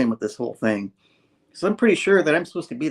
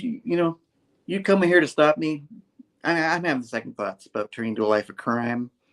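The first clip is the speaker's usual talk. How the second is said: ordinary delivery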